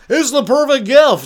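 high, loud, booming radio DJ voice. Host pitching a gift to listeners from the studio, radio DJ voice. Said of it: "I'll talk like a radio DJ".

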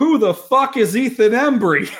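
mock shrill, high, all-out full-lung yelling. Recounting his buddy yelling a question about a man nearby, imitating a friend shouting. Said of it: "at the top of his lungs".

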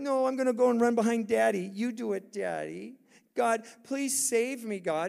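put-on childlike little kid voice. Acting out a little kid refusing a parent's push: imitating a little kid. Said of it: "We're like these little kids".

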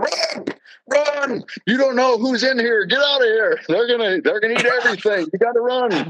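mock urgent yelling, pitched way up high. Retelling how Art yelled at a cow outside the window: imitating Art yelling. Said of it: "he just starts yelling at this cow".

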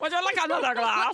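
put-on Dutch accent. Joking around, offering another glass of wine in a Dutch accent voice. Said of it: "This is my Dutch voice".

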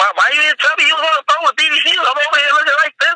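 very high, furious, acted-out angry tone. Retelling what a woman said after learning of his phone call, imitating her cursing him out. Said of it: "She cursed me the fuck out".

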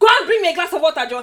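very loud, barked, bossy shout. Retelling ordering water in a restaurant: imitating a bossy demand. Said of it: "show them that you're mad".

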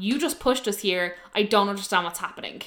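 usual speaking voice

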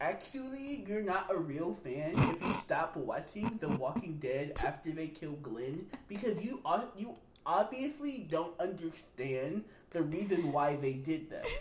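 put-on nerdy know-it-all character voice. Mimicking people who say you're not a real fan: put-on nerd voice. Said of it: "let me do my nerd voice".

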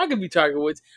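ordinary talk

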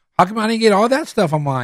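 voice dripping with attitude. Retelling a man complaining about his plate compared to theirs, imitating someone with attitude. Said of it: "with an attitude".

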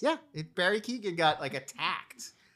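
funny, swooping sing-song, playful joking tone. Passing on news in a conversation, in a funny tone of voice. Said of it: "I'm saying it in a funny tone of voice".

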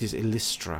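superior, condescending, haughty, lofty tone. A game master's character answers when asked her name, haughty. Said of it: "She kind of looks down her nose".

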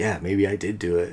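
put-on, mock-sarcastic tone. Discussing a scene, the speaker quotes a character's very sarcastic reply, acted out. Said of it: "very sarcastically back".

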